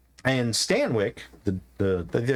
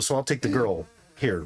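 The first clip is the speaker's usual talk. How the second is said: ordinary talk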